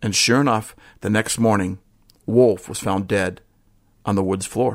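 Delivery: ordinary delivery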